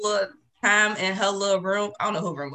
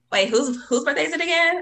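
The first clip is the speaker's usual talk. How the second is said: put-on high, disrespectful little boy voice; 7 semitones higher than usual. Retelling a birthday surprise, imitating Humphrey's voice. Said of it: "I remember his vo-, his voice. He was like".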